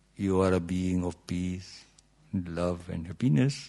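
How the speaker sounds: soft, pleasant, nicely spoken Indian accent. Speaker quoting what people like him tell others: Indian accent. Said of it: "we say in our Indian accent".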